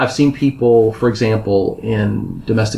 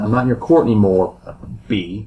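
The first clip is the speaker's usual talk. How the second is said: put-on muttering under his breath. Retelling what one of the posse said while filing out: muttering under breath. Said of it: "said under his breath".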